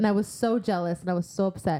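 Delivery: ordinary delivery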